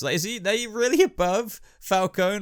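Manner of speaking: voice breaking, cracking up high. Struggling to rank villains in your video, with your voice cracking. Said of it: "My voice just cracked there".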